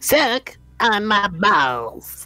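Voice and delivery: put-on bratty cartoon kid voice with "balls" drawn out. Speaker voices a sea slug found under a rock, in a Cartman voice. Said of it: "you give it like a Cartman voice".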